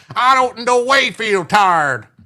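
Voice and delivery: very slow, high, put-on southern drawl. Doing a best Hillary impersonation of her speech, Hillary Clinton southern accent. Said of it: "Try to do a southern accent. ... my best Hillary impersonation".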